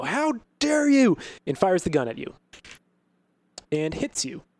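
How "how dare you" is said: high, loud, slow furious female shriek. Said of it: "the woman shrieks and go".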